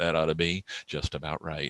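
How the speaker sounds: low, soft, dry deadpan. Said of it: "Kirk looks right at the camera and goes".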